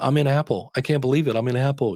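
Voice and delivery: put-on tearful yet joyful voice. Retelling a client's tearful phone call: imitating Marcy Rosenbaum crying with joy. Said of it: "she called me up crying".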